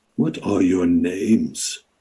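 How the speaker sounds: low creaking voice like wet wood, words drawn out. Narrating the scene, the speaker asks the party's names: creaking voice like bending wet wood. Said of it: "creaking sort of voice".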